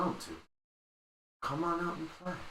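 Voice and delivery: soft friendly coaxing voice. A voice in a hiding character's head calls them out, friendly, convincing Bone Naga voice. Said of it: "A very friendly, convincing voice is that of the Bone Naga".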